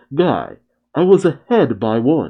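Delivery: ordinary delivery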